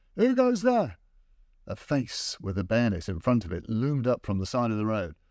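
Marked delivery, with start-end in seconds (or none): 0.2-1.0 very high cry, saturated with fear. A sentry in the darkness challenges an approaching man, crying out in fear. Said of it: "a voice, saturated with fear, cried out from the darkness".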